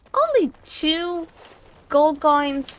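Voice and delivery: indignant, high, slow, outraged put-on voice.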